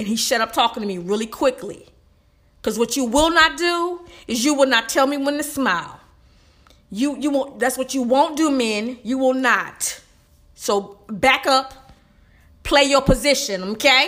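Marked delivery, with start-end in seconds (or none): 2.6-14.1 worked-up, riled-up rant, building in intensity. Insisting that men will not tell the speaker when to smile, riled up. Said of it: "I'm getting riled up".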